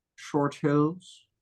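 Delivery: acted villain character voice. Chatting about living in northern New Jersey, saying the town's name in Dr. Evil voice. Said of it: "Dr. Evil voice".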